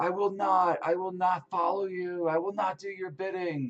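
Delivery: put-on high screams and shouts. Recounting a man talking with two creatures in two languages, retelling his screams. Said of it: "it's just like screams and, and, and shouts".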